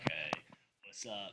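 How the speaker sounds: very low, very deep, hushed, soft raspy voice. Imitating the other person's talk-show-host voice back to them, in a put-on deep raspy voice. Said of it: "You got that deep, like raspy voice".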